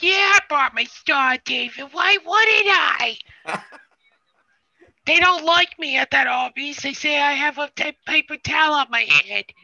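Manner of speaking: very high, loud male New York accent. Showing another speaker how the voice should go: New Yorker guy accent. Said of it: "you're going for the New Yorker guy".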